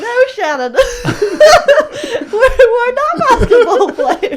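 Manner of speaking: play-acted, very high, very loud, drawn-out laughing. Retelling own reaction to a line in a video: retelling laughing while talking. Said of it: "I just burst out laughing, going".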